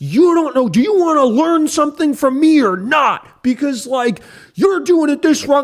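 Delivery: very high, loud, furious angry yell. Retelling a guy who yelled at him for twenty minutes, retelling an angry yell. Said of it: "just yelling at me".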